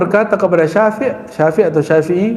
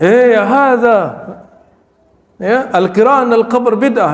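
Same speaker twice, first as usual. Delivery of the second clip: scolding shout, high and drawn out; 5 semitones higher than usual. Act out Imam Ahmad scolding someone after leaving the cemetery, retelling a shout. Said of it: "itu kan teriak itu".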